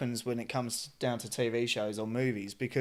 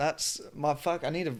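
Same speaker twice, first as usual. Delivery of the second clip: ordinary delivery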